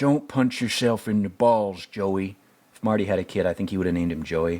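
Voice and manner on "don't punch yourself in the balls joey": put-on Texan-sounding voice. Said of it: "He's slowly turning into Trump".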